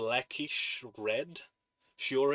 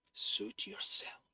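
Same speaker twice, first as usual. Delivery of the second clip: soft-spoken, very high-pitched voice; 9 semitones higher, 4 dB quieter than usual. A woman answers the other character after gesturing, speaking softly. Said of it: "she says softly".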